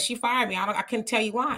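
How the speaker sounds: plain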